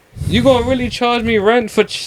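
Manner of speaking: high-pitched Jamaican accent.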